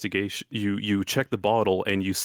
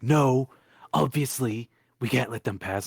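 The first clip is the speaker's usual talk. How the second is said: tiny, small little guy character voice; 4 semitones higher than usual. Voicing the little guy in a story for the group: little guy voice. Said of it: "I've changed this little guy's voice like three times".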